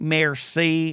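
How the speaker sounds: merci in grudging Southern belle accent. Recalling saying merci in Paris as a Southern debutante: Southern American accent on merci. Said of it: "I'd say it like I was a Southern debutante who was forced to say it because they lost some war".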